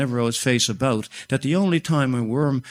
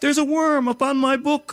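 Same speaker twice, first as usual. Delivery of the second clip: very high, shrill, trembling, shaking scream; 13 semitones higher than usual. A narrator reads a girl's line, screaming in a shaking voice. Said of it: "she screamed in a shaking voice".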